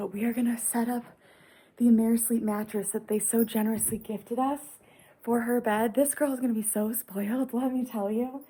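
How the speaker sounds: hushed voice, very quiet. Talking to viewers while a niece sleeps next door: speaking very quietly. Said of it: "I'm speaking very quietly".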